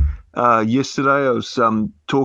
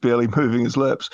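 ordinary talk, nothing marked

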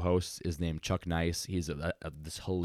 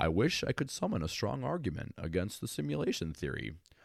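super fun animated scientist voice, widely swinging pitch; 5 semitones higher than usual. Reading a quote on simulation theory as Neil deGrasse Tyson impression. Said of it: "I'm gonna try to do my deGrasse Tyson".

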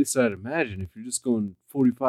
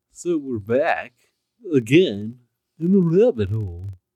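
loud, silly put-on goofy voice; 7 dB louder than usual. Podcast host welcoming listeners back to the show, in a goofy voice. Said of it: "Is that a goofy enough voice?".

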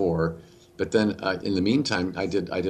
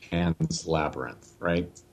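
normal talking voice

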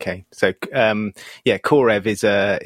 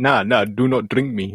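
slow, deliberate, put-on Russian accent. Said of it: "I'll give up with accents".

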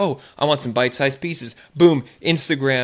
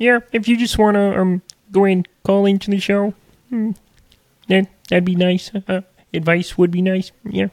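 put-on cartoon frog voice; 5 semitones higher, 3 dB louder than usual. Trying out voices for calling in to the show: Kermit the Frog voice. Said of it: "Is that a good Kermit? Rate my Kermit".

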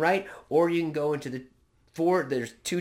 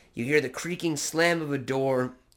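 ordinary delivery

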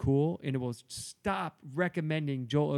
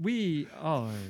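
halting, dramatic delivery; 2 semitones higher than usual. Introducing the podcast, in a William Shatner voice. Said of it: "that was my William Shatner".

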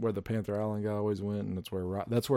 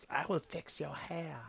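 high, hushed, tiny little troll creature voice; 7 semitones higher, 9 dB quieter than usual. Playing a character offering to fix someone's hair for a price: little troll voice. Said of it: "Just heard like some little troll's voice".

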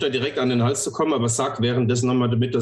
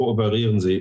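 mechanical, flat, level robot monotone. Saying it again to the other person, in a monotone robot voice. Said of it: "als in Roboterstimme monoton".

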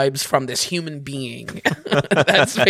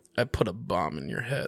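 very low pitch, very quiet; 7 semitones lower, 10 dB quieter than usual. Announcing and then doing a best impression: Philip Seymour Hoffman impression. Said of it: "I'll now do my best impression of Philip Seymour Hoffman".

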